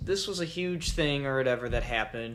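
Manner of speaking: usual speaking voice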